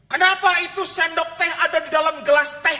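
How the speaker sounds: shrill, very high, very loud scolding voice. Telling a story to an audience, voicing a husband's wife in a high-pitched voice. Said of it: "istrinya dengan nada tinggi mengatakan".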